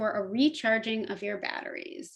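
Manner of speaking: plain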